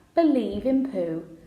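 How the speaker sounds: usual speaking voice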